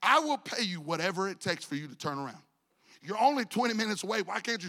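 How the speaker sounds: ordinary talk, nothing marked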